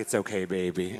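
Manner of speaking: very low, hushed, very deep soft voice. Retelling how she answered you kindly after an accident, imitating Paris's deep voice. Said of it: "you know how she had that deep voice".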